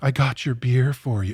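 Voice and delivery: put-on sultry female robot voice. Joining in on a bit about a reprogrammed robot, sultry female robot voice. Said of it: "sort of sultry female voice".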